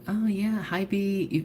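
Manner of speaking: high, polite event staff voice. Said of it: "The staff was like".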